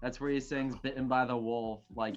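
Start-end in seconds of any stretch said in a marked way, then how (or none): none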